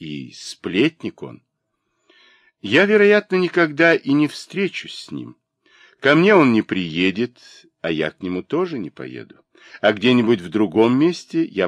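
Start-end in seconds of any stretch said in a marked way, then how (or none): none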